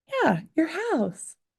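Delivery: put-on high, slow child voice.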